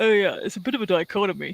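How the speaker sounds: posh, upper-class way of speaking. Imitating the boss at work saying dichotomy: imitating posh boss. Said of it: "'cause he's posh".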